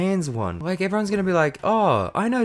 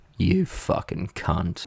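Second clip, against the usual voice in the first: very low, rough, forced put-on manly voice; 13 semitones lower than usual. Showing what they'd shout when someone crashes them: put-on man voice. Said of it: "I can do the man voice".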